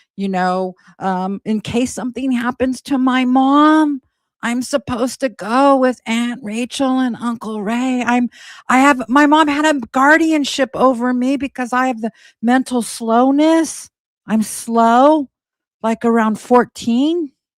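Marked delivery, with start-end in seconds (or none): 1.5-17.3 put-on childlike baby voice. Quoting her telling the detective about her guardianship: imitating a baby voice. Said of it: "she's now claiming to be in her baby voice".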